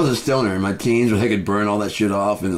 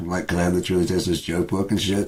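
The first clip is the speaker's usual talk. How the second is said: hushed, quiet speaking voice; 2 semitones lower, 3 dB quieter than usual. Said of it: "So I'd be like, quietly".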